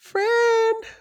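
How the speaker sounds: voice pushed up very high, loud. Testing whether the voice can go up, the speaker tries a higher pitch. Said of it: "let me see if I can go up".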